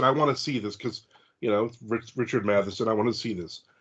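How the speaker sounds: usual speaking voice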